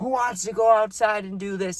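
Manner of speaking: mock rowdy, high, drunken-sounding yell. Describing a wasted guy at a party, imitating him yelling. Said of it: "He's like yelling".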